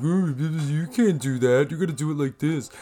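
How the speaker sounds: dumb-sounding voice, word you drawn out. Showing a voice known as the stupid person's voice. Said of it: "you'll hear me use what's been referred to as the stupid person's voice, where I'm like".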